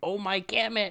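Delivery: mock toned-down half-scream outburst. Imagining the actor as the movie's main character: Lucas Cruikshank screaming. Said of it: "you have to see him just screaming".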